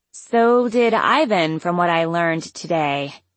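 ordinary talk

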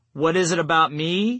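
ordinary delivery

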